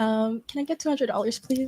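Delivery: sugary, fake-sweet, flirty put-on voice. Role-playing a phone call to ask for money: pretend sweet-talking a guy. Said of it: "pretend you need something from me right now".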